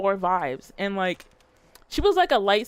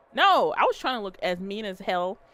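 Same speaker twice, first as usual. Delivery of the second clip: normal talking voice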